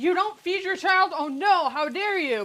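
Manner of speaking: loud, put-on indignant critic voice, scandalised and outraged. Imitating an imagined viewer scolding about not feeding the child: imitating an outraged viewer. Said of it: "I know somebody's going".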